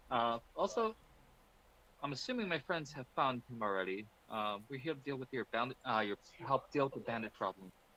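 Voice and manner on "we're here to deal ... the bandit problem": whispering, quieter and faster. A player's character beckons a woman closer and speaks to her, whispering. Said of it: "Like he's whispering this to her".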